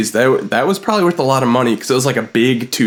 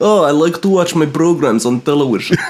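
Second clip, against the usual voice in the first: put-on Eastern European accent; 2 semitones higher than usual. Playing along as the other speaker imagines touring abroad, in an eastern european accent. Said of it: "I feel like I am in Eastern Europe".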